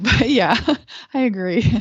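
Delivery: slow, laughing through the words. Agreeing after the other speaker's reply about light workers, laughing while talking. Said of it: "Sorry, I'm laughing".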